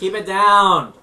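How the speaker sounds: very loud, high-pitched yell. Voicing a man in a fancy hat in the corner: NPC yelling. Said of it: "The man in the fancy hat in the corner yells".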